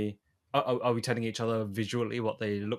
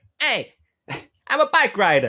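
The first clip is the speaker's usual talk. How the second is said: loud, slow, drawn-out, swooping New York voice; 10 semitones higher, 10 dB louder than usual. Joking about a movie role, imitating Tom Hardy as the New York guy. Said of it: "He's gonna be the New York guy".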